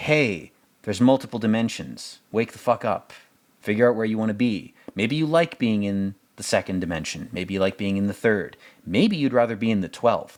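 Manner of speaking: ordinary talk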